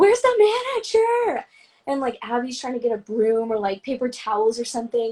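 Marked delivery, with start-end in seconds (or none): 0.0-1.5 frantic, very high-pitched shriek. Retelling a work mishap, imitating own past screaming. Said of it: "I'm screaming".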